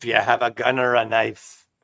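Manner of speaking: put-on Irish accent. Trying out an accent for fun: imitating an irish accent. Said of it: "that's Irish".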